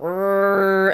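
imitated loud, straining, growling, fan-like machine whir.

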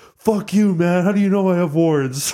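put-on high-pitched drunk yelling. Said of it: "he's yelling".

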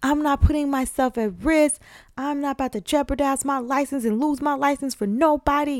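indignant ranting outburst, yelling. Retelling how a woman came out of a patient's room: retelling her yelling. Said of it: "she's like yelling".

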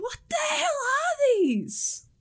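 screaming in character voice. Voicing a stabbed enemy calling over to the other two: screaming in character. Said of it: "he screams over to the other two".

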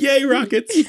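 very high, gleeful cheer. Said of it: "I'm like".

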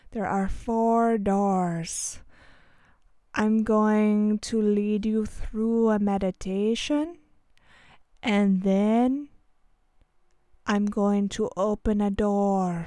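very slow speech, every word dragged, "doors" drawn out. Imitating how a man leading a meditation talks: speaking very slowly. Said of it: "This is how slowly he talks".

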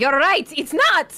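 charging war cry, high and loud battle shout. Voicing a character who runs out to attack: voicing Restrata shouting. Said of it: "Restrada's gonna run out to here and go".

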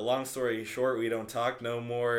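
usual speaking voice

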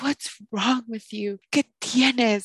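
dramatic, high-pitched, over-the-top worried mother voice. Retelling how mom asked what was wrong: imitating mom dramatically. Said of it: "so dramatic".

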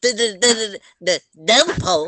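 put-on stuttering cartoon pig voice. Joking during a game after being told to stop sounding like Porky Pig: Porky Pig voice. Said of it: "stop sounding like Porky Pig".

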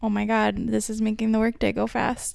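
usual speaking voice

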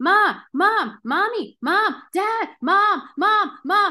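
put-on very high, drawn-out child voice. Speaker talking to parents imitates little kids calling all day, in a high-pitched kid voice. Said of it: "little kids with their high pitched voice going".

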